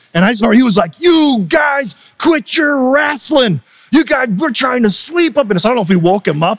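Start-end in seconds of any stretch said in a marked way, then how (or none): 1.0-5.7 high, screaming, mock-angry yell. Retelling how the head coach Terry Price woke up angry on the bus: imitating Terry Price screaming. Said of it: "he just starts screaming".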